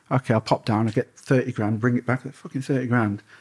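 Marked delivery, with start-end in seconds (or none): none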